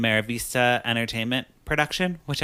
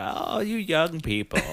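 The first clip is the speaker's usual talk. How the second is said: put-on, pitched-up old grandpa voice; 5 semitones higher than usual. Joking about playing a grandpa in a future movie: imitating an old grandpa.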